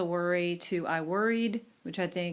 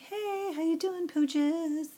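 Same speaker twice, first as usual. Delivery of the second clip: put-on very high, sweet, cooing baby talk; 11 semitones higher than usual. Showing how people talk to their pets, greeting the dogs in baby talk. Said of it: "kind of baby talk like you do with pets".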